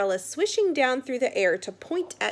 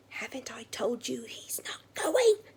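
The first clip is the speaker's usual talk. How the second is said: hissed words. Narrator reads a character refusing to let the boy go to that school: hissed. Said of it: "he hissed".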